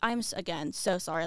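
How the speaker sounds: plain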